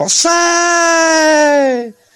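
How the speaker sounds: loud shouting.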